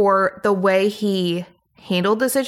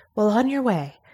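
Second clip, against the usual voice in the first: imitated, weird, whispery host-style voice. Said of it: "in that weird, like, whispery tone".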